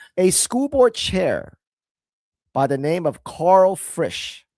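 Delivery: very slow deliberate spelling-out. Introducing a story, the speaker names a school board chair, speaking really slowly. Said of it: "I'm going to say this really slowly".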